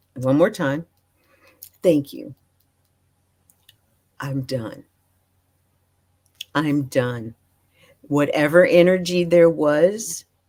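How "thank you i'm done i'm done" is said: put-on deep breathing while talking, lower pitch. Retelling talking to donuts at a store: retelling talking with deep breaths. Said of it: "I'm deep breathing as I'm saying each sentence".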